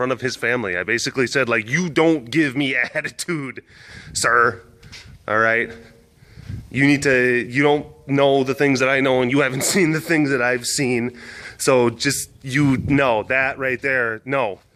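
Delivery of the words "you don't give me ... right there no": mock stern, firm, no-nonsense scolding tone. Retelling scolding a man too close to an enclosure: retelling a stern scolding. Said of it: "I scolded him very sternly".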